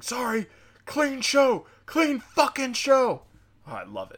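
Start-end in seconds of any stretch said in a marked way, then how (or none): 0.0-3.2 play-acted shrill, very high screaming, stretched out. Retelling a friend at a comedy club yelling at the owner: imitating a friend screaming. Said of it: "he just started screaming".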